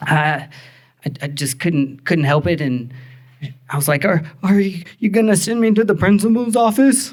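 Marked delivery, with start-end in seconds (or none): 4.0-7.1 high, mock hyperventilating, tearful, stammering child voice. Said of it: "I was hyperventilating as a child and crying".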